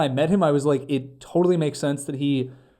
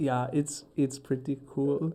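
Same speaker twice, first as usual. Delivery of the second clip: put-on German accent, much quieter; 9 dB quieter than usual. Retelling Kumail's reaction to a prank, imitating Kumail in a German accent. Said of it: "I made him sound German".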